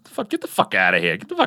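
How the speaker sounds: put-on swooping, tough, animated Brooklyn accent. Retelling how he sometimes talks, imitating a Brooklyn accent. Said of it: "he'll do that Brooklyn thing".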